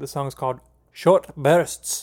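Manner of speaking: vague, likely inaccurate put-on Scottish or Irish accent. Reviewer announces the next track title in a vague scottish or irish accent. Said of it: "I'm not sure what accent I did there, if it was Scottish or Irish".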